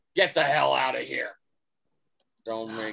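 speaking roughly. Voicing a man shoving a player's character away: speaking roughly. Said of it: "he kind of roughly".

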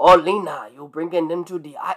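put-on Creole accent drifting all over the place. Mocking the worst character's accent, imitating a character's Creole accent. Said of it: "this all over their Creole accent".

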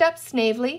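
plain reading voice

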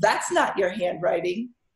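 put-on snotty tone. Retelling a best friend's call about a birthday card, mimicking a snotty voice. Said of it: "In that snotty voice only a best friend can do".

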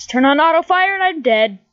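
full-on, high-pitched shouted outburst. Streamer playing Diepio dies in the game, yelling. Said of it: "Sorry for yelling".

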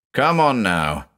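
put-on firm, fully authoritative commanding tone. Approaching a man who leaned over a bridge parapet, speaking English: commanding tone. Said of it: "I said in my best commanding tone in English".

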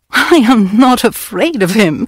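said through a laugh. Warned the Colonel won't take kindly to blackmail, a woman answers laughing. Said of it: "she laughed".

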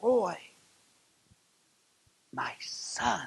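hushed, whispered voice. Preaching about how the Savior calls him by name: Jesus whispering. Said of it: "He whispers to me and says".

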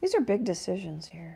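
dry, sarcastic, tongue-in-cheek. Choosing what to paint next while painting: sarcastic. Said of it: "I'm being sarcastic".

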